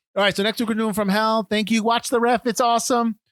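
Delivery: microphone announcer voice. Speaker wrapping up, announcing next week's movie, in a microphony voice. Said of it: "I did that in a microphony voice".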